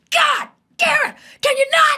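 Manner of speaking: very loud, shrill, drawn-out, exasperated furious screaming. Retelling how parents with a short fuse suddenly lost it: imitating parents screaming. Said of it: "just screaming".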